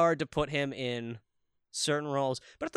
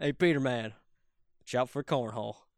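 put-on laid-back voice, lower pitch; 4 semitones lower than usual. Quoting a favorite line from the movie: Diedrich Bader voice. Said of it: "That Diedrich Bader rocks in that movie. When he goes".

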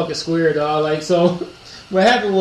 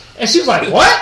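ordinary talk, nothing marked

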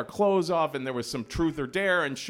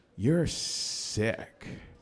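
mock muttering under breath, lower pitch; 6 semitones lower than usual. Retelling a boy's remark as he walks away from the pool: imitating a mutter under breath. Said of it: "under his breath in my direction".

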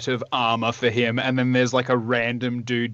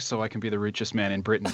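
soft throwaway mutter under the breath; 3 semitones lower, 5 dB quieter than usual. Imitating a co-host's Patreon plug, muttering under the breath. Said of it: "under your breath".

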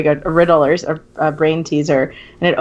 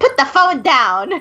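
dramatic, high-pitched, theatrical acted toddler-like voice; 9 semitones higher than usual. Retelling what a two-year-old niece said: imitating a dramatic demand. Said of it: "really dramatically".

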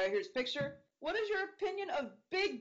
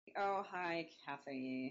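quiet, weary, exasperated sigh; 7 semitones lower, 7 dB quieter than usual. Acting out a scene where Tara rolls her eyes and sighs: imitating Tara sighing, done with everything. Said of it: "rolls her eyes and sighs".

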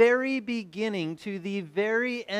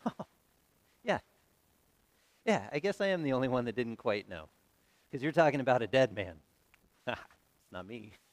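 put-on smirking chuckle, much lower pitch; 9 semitones lower, 5 dB quieter than usual. Imagining Jesus replying to the people around him, Jesus speaking with a chuckle. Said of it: "with a little smirk and a little snicker almost, and just a little chuckle".

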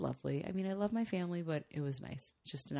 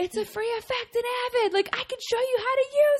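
mock angry yell, higher and louder; 9 dB louder than usual. Retelling a fiancé's rant about a missing phone effect: imitating someone screaming. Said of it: "He was screaming".

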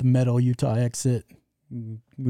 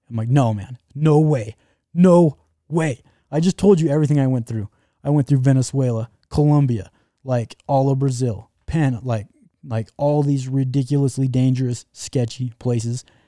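usual speaking voice

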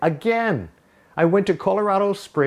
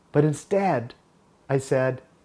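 plain

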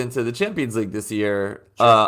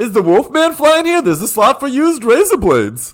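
very high, loud, hungover-sounding comic delivery; 10 semitones higher, 5 dB louder than usual. Joking about airline food in a put-on hungover Seinfeld voice. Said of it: "hungover Seinfeld is the new character I'm doing".

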